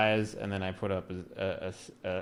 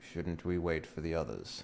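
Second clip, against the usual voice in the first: low, hushed half-whisper under the breath; 4 semitones lower, 9 dB quieter than usual. In the game, turning to one of the party members, half-whisper. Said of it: "I whisper".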